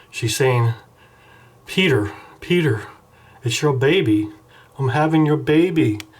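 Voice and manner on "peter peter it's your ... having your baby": weepy, sobbing, tearful crying voice. Acting out a comic picture of a caller on the phone: mock crying as Wendy. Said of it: "She's on the cell phone crying".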